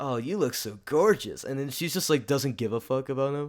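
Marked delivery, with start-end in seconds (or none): 0.0-1.4 slow, playful, teasing, flirtatious tone. Recounting a film scene where Zeke teases Sharpay: imitating Zeke teasing. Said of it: "He's like teasing, he's like".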